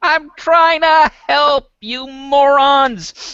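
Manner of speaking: very high, furious yelling, morons stretched. In a game, a player's character, just hit by an arrow, calls out: shouting. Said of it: "Do you actually shout that out loud?".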